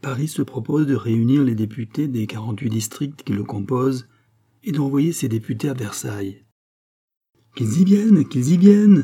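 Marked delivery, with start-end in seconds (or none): 7.5-9.0 exultant, fierce joyful outcry, savage, high and loud. The queen reacts to news of Paris sending deputies, crying out with fierce joy. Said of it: "s'écria la reine avec une farouche joie".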